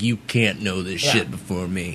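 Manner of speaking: mock-serious, very grave tone. Recounting what they told her about spoilers, retelling in a very serious tone. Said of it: "I had a very serious tone being like".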